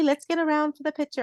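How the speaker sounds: put-on English accent. Retelling what a woman said at a family photo: English accent. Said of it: "my English accent".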